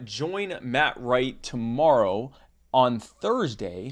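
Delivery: deliberately slow delivery. Host closing the episode stalls while pulling up the next guest, speaking slowly. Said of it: "I'm speaking slowly so I can pull up".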